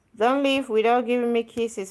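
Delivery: ordinary delivery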